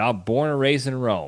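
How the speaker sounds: imitated New Jersey accent. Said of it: "with his Jersey accent".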